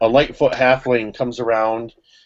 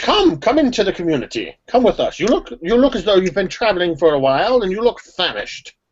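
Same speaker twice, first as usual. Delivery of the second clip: higher-pitched, beckoning character voice; 7 semitones higher than usual. Voicing the constable telling adventurers about lost halflings: Constable Warren voice. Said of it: "And he says".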